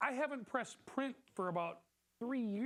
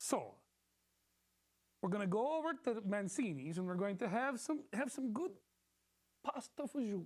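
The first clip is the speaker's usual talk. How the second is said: put-on Italian accent in English. Told mid-scene to become italian, talking about going out for dinner; italian accent. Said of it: "Speak with an Italian accent".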